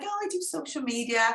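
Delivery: mock-meek voice. Retelling meeting a live video expert at an event, acting out a meek, humble voice. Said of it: "I was all very meek and very humble".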